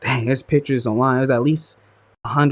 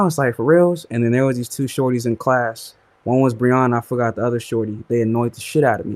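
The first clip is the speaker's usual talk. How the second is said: normal talking voice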